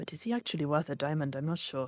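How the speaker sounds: muttering under the breath. Player voicing his character's aside to the group: quiet mutter. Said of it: "he mutters more quietly".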